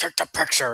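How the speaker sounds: sudden high yell. Retelling how he yelled at them while signing their photo, yelling in Freddy's voice. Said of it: "yells at me like".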